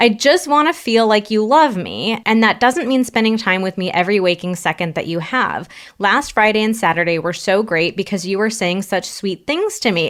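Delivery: normal talking voice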